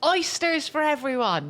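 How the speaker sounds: very high, swooping, animated announcer-style delivery. Retelling a night out, imitating Bill Murray ordering for the room. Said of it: "like this".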